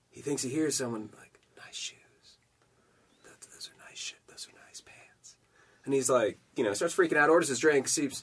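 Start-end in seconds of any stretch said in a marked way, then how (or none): 1.6-5.4 very quiet, breathy, barely-there whispered murmur. Telling a bar joke, voicing an unseen speaker: imitating a very quiet voice. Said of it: "real, real quietly".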